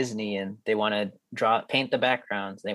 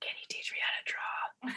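quiet, very soft, breathy whisper. Retelling a scared student asking the teaching assistant for help: imitating a whisper. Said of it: "she whispers to me".

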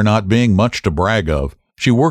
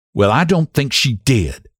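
firm, resolute, stout, higher pitch; 4 semitones higher than usual. Mrs. Hale answers Mrs. Peters, stoutly. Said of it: "affirmed Mrs. Hale stoutly".

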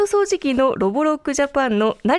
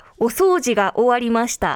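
normal talking voice

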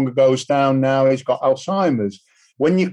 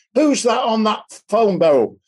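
raised, higher-pitched shouting; 8 semitones higher than usual. Retelling a husband calling out about the phone: imitating someone shouting. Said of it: "this voice shouted".

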